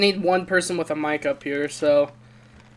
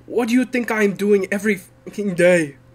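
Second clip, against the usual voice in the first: put-on raised, louder Jamaican accent. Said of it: "clearly not an American accent".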